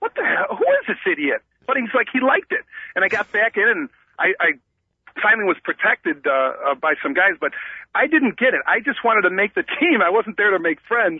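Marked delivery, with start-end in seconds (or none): 0.0-1.4 put-on laughter while speaking. Retelling the coach's reaction while a player chased the speaker: imitating the coach laughing. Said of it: "the coach is like laughing like".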